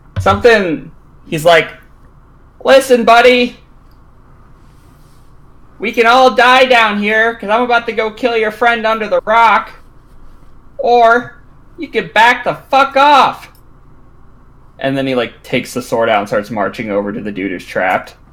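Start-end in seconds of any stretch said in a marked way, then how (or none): 2.6-13.5 very high, hollered shouting. Voicing a character warning a foe in a fight: shouting up to Kurt. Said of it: "he's gonna shout up to Kurt".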